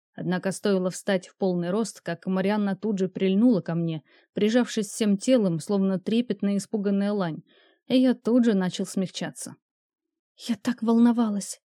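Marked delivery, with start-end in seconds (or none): 10.4-11.6 loud theatrical whisper. Reading Marianna's words as she clings to the narrator, half-whispered. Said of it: "прошептала она".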